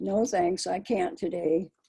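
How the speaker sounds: ordinary delivery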